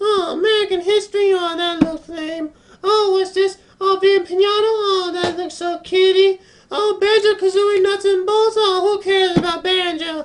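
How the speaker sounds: tiny voice, very high throughout. Retelling someone who commented aloud on every game he picked up: high-pitched little voice. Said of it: "in this high pitched little voice".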